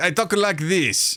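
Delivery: put-on loose Russian accent. Describing a player's druid character, Gramus's Russian-ish accent. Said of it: "call it a Russian accent".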